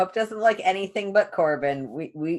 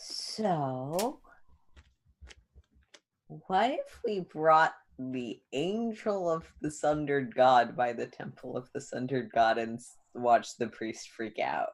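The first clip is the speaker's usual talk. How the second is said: hushed half-whisper, "so" drawn out; 4 semitones lower, 5 dB quieter than usual. A game character quietly suggests a plan to two companions, half-whispering. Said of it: "just normally whispering".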